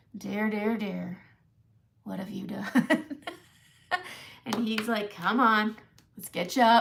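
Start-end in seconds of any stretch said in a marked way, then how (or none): 0.1-3.0 imitated Southern accent. Retelling a mishap at dinner, quoting the man who opens the door: Southern accent. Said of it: "we do it in a Southern accent too".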